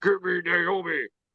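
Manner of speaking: heroic, proclaiming superhero voice. Retelling a wrestler's backstage line: imitating her Superman voice. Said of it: "in her Superman voice".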